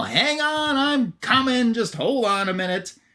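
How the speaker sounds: very high, drawn-out, acted-out yell. Retelling a story where Lobo yells at a bleeping call, Lobo yelling at a call. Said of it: "he's kind of yelling at it".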